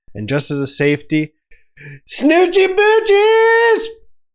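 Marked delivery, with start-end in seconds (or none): 2.1-3.9 high, slow, loud, drawn-out yell. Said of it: "didn't get to do it in that empty movie theater".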